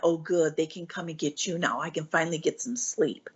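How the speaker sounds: put-on quiet muttering under the breath. Retelling own past words after Mom gave away the top bunk: muttering under breath. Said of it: "under my breath".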